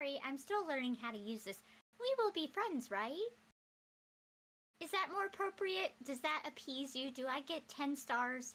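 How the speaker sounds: flat, voice assistant-like phone voice. Pretending to be Siri while talking with someone, Siri voice. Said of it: "I'm pretending to be Siri".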